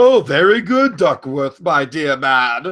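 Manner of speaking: condescending, loud, slow fake British accent. Imitating the genie talking to Duckworth: put-on British accent. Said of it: "the genie doesn't really have a British accent".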